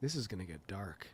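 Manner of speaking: barely audible, very soft, hushed half-whisper. Retelling what a son said at the movie: imitating a half-whisper. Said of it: "a thirteen-year-old whispers".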